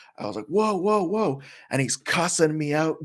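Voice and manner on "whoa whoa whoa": mock, high, startled, scared scream. Telling about walking into the wrong building and being yelled at, you are imitating your own scream. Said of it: "screaming at me at the top of his lungs".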